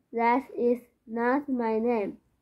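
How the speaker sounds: ordinary delivery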